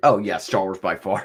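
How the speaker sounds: put-on, certain, instant no-doubt delivery. Retelling how another speaker answered the question: imitating a sure, instant answer. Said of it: "without a doubt".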